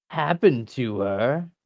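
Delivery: menacing, sinister villain voice. Narrator voicing a villain finishing his threat, menacing villain threat. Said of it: "flip his dagger upside down ... and say".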